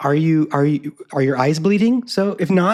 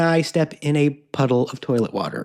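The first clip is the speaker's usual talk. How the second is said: ordinary talk, nothing marked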